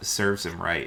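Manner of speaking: quiet muttering under breath. Voicing a character reacting to his brother's head: whispering under his breath. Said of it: "he whispers something under his breath".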